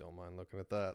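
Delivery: put-on muttering under the breath. Speaker retells what an old man said walking up behind someone; imitating muttering under breath. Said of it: "under his breath to himself".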